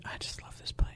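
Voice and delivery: soft, unvoiced whisper.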